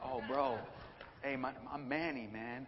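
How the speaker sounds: slow, laid-back, swaggering bro voice. Retelling meeting a newcomer at campus ministry: imitating Manny's swagger. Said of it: "He had this swag to him".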